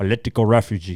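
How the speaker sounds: put-on gangster voice with Cuban accent. Speaker jokes about how he would go into court, in a Tony Montana accent. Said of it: "That's my Tony Montana accent".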